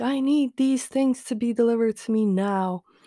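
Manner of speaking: put-on petulant, entitled, demanding tantrum tone. Sick at home, quoting the grandmother's demand; mock tantrum. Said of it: "had to throw a tantrum of like".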